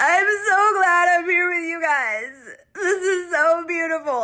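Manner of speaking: put-on weepy crying, very high, loud, "guys" stretched. Retelling words said while driving on a trip: imitating Danny crying. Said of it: "And then Danny starts crying".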